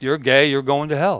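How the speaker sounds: put-on deadpan, matter-of-fact delivery. Speaker acting out exactly how a woman said it, imitating a matter-of-fact tone. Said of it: "just matter of fact".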